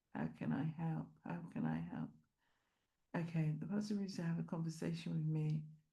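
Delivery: very quiet, barely audible mumbled reading aloud. Reading out a question about a pastor and his family: mumbling. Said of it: "Sorry, I'm mumbling".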